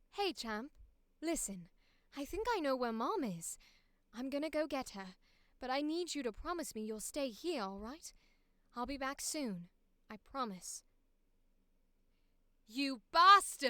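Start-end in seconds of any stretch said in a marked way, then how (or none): 0.2-10.9 put-on affected posh upper-class British accent. Voicing a character's lines, in a posh british accent. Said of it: "in this British posh accent".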